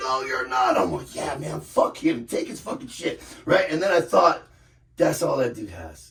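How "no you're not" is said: mock panicked freak-out, much slower. Speaker retells a man's reaction to a threat to take his stuff: imitating a man freaking out. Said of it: "the guy starts freaking out".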